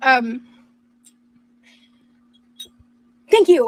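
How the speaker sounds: loud, overwhelmed, overjoyed voice. Speaker thanking others, overwhelmed with joy. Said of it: "I'm a little overwhelmed with joy".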